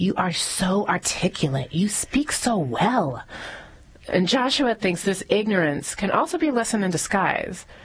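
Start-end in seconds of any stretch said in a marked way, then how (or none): 0.0-3.2 slow, condescending, patronizing talking-down tone. Mimicking what people say to Joshua about his race, in a mock-patronizing tone. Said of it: "That patronizing tone".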